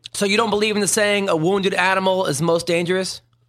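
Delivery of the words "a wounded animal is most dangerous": ordinary talk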